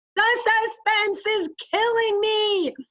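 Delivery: shrill, very high, full-volume loud yell. Retelling a student reading a story with classmates: imitating a very loud yell. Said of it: "he is very loudly saying".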